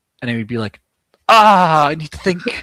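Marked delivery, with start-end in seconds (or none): 1.3-2.4 mock, booming, very loud, drawn-out theatrical delivery. Retelling a writing session, imitating a fellow writer: imitating someone speaking very dramatically. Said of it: "very dramatically going like".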